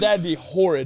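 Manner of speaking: ordinary talk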